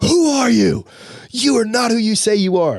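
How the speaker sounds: full, loud screaming.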